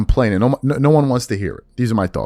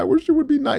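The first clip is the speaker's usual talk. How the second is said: whimpering, very high, fake crying whine. Mocking a critic's complaint about the commentators: mock crying. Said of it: "and he's crying".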